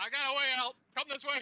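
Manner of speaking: shrill, booming, very high, very loud in-character scream. Playing a character screaming to the others about a way out: screaming in character. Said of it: "he's screaming back with the people".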